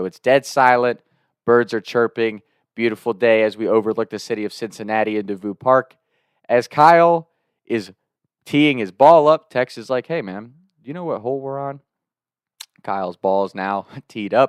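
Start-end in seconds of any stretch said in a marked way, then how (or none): 10.1-11.8 fast, hurried, very quiet, hushed half-whisper. Retelling what Tex asked during a golf backswing, half-whispering. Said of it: "we were whispering".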